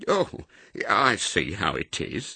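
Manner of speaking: chuckling, laughing while speaking. A man who heard a little voice but saw nobody speaks, laughing. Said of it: "laughing and scratching his wig".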